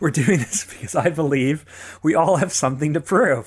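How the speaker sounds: talking while breaking into laughter through the words. Attempting a serious intro and failing: laughing while talking. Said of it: "I can't do it without laughing now".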